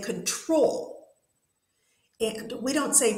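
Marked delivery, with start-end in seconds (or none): 0.0-1.1 control with stress on second syllable -trol. Teaching pronunciation, contrasting where a word's stress falls: stress on 'trol' in control. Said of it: "stress is on the second part".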